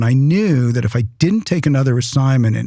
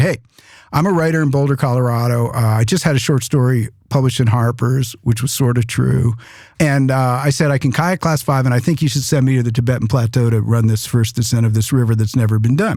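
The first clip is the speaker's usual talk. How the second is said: ordinary talk, nothing marked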